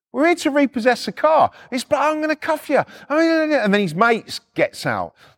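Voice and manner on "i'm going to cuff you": mock shouting, loud. Repo agent retelling what a cop yelled at him; retelling a cop's shout. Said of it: "They're all fucking shouting at us".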